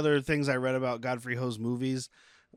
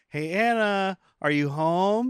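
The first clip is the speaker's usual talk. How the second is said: put-on sugary, high voice, very slowly stretched out; 7 semitones higher than usual. Imitating a character calling out on coming home: imitating a sweet tone. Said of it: "You started sweet".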